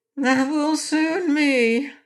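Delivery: high, pained groaning through the words. Narrator reading the Orc's answer, groaning. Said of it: "asserted the Orc with a groan".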